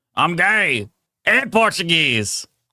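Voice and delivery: rough, gruff, drawn-out shouted drawl. Recording a soundboard clip someone requested, yelling it in a gruff voice. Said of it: "yell out in a gruff voice".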